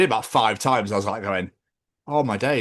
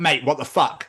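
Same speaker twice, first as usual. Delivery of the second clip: put-on annoyed, irritated outburst, pitched higher; 4 semitones higher than usual. Retelling being walked into at a gig: retelling own annoyed outburst. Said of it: "I was getting really annoyed".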